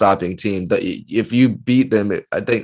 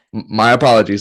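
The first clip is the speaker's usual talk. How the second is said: plain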